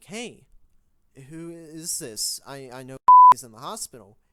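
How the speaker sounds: frantic, very loud, panicked voice. Retelling answering a phone call on the way to hospital, imitating own past panic. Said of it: "I pick it up in a fucking panic".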